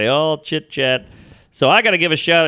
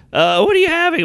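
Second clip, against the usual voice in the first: high, trembling, terrified voice; 13 semitones higher than usual. Retelling a store clerk who was terrified: imitating a trembling, terrified clerk. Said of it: "He was trembling".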